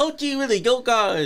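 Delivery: squeaky, very high, goofy, wholesome gee-whiz voice. Imitating the wrestler's persona talking to ladies: imitating his goofy nice-guy voice. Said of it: "The ladies hear you say".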